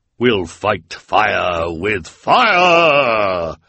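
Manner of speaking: loud, very slow triumphant cry. The woman with hair but no beard speaks out: crying out in triumph. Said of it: "cried in triumph".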